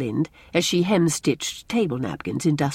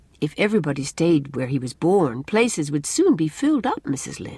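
ordinary delivery

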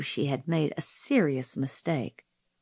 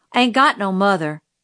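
usual speaking voice

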